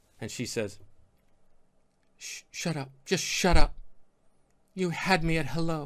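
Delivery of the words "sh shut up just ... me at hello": stumbling stammer at first, then smooth movie heroine voice. Acting out a line from a movie scene: Renee Zellweger impersonation. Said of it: "my Res-, Renee Zellweger impersonation".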